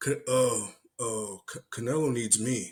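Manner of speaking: put-on stumbling. Act out a fighter asked if he would fight canelo, imitating someone stumbling over his words. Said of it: "he started like stumbling his words".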